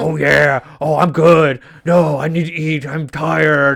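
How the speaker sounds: put-on slow, old-school eighties pro wrestler drawl. Imitating a show's gnome character who talks like a professional wrestler. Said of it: "He talks like an eighties, nineties professional wrestler".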